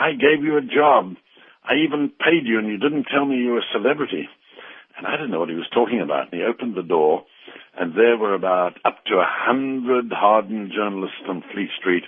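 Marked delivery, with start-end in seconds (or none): 0.0-4.3 put-on stern, thundering captain voice, pitched up. Retelling the captain scolding a young man: imitating a captain thundering. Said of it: "And he thundered at me".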